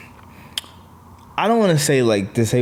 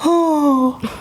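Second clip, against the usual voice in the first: very high, pained, pitying oh. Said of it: "I just heard her go".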